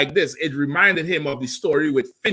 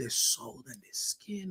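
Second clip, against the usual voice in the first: very soft, hushed whisper, barely voiced, raving; 15 dB quieter than usual. Retelling how a man in a video started to whisper: imitating someone whispering. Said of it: "And he started to whisper".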